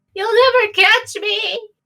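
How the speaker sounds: very high, echoing, distant shriek fading away. Narrating a ranger as she runs off into the night: distant echoing scream. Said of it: "her screams of innocence".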